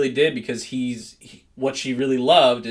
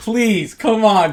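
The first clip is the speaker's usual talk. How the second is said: put-on, high, loud, pleading, imploring begging; 8 semitones higher, 7 dB louder than usual. Retelling a movie character's line: imitating begging. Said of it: "It's like he's begging".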